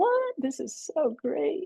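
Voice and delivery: very high voice full of amazed disbelief. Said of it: "I'm like".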